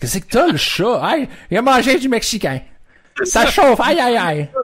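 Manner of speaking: very high, loud silly caricature voice.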